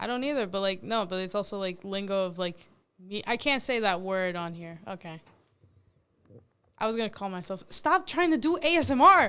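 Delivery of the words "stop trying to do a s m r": shouting, higher pitch. Telling the other speaker to stop trying ASMR: yelling. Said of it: "Why are you yelling?".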